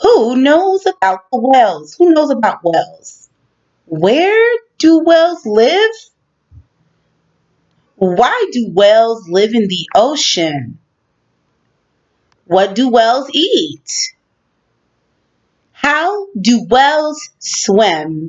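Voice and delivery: pitch rising on the last word of each phrase. A teacher reads question-word questions aloud to students, with rising question intonation. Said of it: "listen to how my voice changes at the end of each of the questions".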